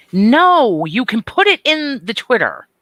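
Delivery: loud, very high, angry outburst. Correcting someone about where to post the link, angry voice. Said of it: "That was angry voice".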